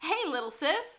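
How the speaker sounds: mock bright bubbly voice. Retelling a show scene, a man chased by thugs answers his sister's call: bright bubbly Ewan O'Hara greeting. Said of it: "he's very bright and bubbly".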